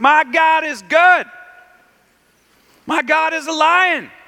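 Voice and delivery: slow, high, loud shout.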